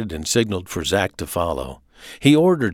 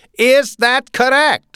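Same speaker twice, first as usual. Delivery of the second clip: very high, pressing, rising pitch; 7 dB louder than usual. [name] presses Zach for an answer, his voice getting higher. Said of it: "[name]'s voice was getting higher".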